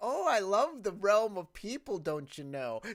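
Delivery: put-on very loud Minnesotan accent. Acting out a tourist demon character: Minnesotan accent. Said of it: "he has a Minnesotan accent too".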